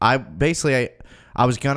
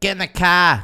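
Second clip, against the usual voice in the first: loud, high-pitched put-on Boston accent; 7 semitones higher, 5 dB louder than usual. Mocking regional accents, imagining a girl telling someone to get in: Boston accent. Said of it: "Boston. Imagine some girl being like".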